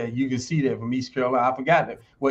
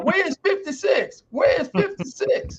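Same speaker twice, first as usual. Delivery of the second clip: put-on scream, higher pitch. Retelling a quarterback searching for a missing teammate: imitating someone screaming. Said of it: "Ron Jaworski started screaming out".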